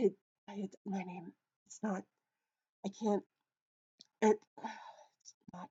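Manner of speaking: quiet muttering to himself. A narrator voices a man trying to remember his name: muttering to himself. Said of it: "caught up in muttering to himself".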